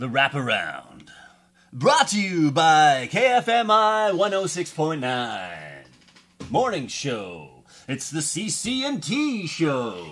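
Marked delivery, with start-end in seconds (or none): 1.7-10.1 louder, slow radio announcer voice. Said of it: "announcer voice from K".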